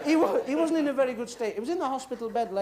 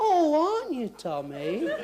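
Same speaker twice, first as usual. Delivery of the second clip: put-on concern, slow, swooping, drawn-out oh; 4 semitones higher than usual. Acting out a friend visiting a sick man in hospital: acting concerned. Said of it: "You hear the concern in my voice?".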